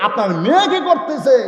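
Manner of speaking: preacher-style shouting.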